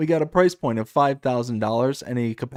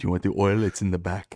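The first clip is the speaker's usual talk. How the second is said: put-on husky Russian accent, much lower; 6 semitones lower than usual. Retelling someone who came up when they opened a building's door: husky Russian accent. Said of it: "a husky Russian ass accent comes up".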